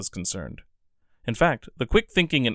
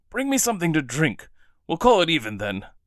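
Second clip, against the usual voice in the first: hoarse, raspy, rough-throated, pitched-up voice; 7 semitones higher than usual. Narrator reading the guard's request to Murasaki, in a hoarse voice. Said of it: "he said in a hoarse voice".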